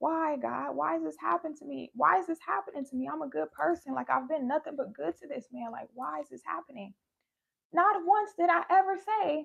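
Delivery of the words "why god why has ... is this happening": weeping, upset, tearful crying outburst. Retelling own words while driving away from the house: imitating own crying. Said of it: "I'm just crying".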